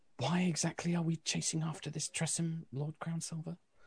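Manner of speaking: high, hushed half-whisper under the breath. Voicing Alyssa questioning Lord Crownsilver while hunting a creature: half-whispering under her breath. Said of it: "kind of whispers under her breath".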